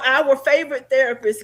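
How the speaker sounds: plain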